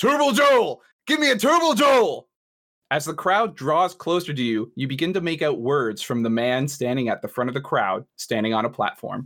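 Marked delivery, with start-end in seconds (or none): 0.0-2.3 very high-pitched, very loud scream. An irate man being pushed back by an upset crowd: screaming. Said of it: "as he screams".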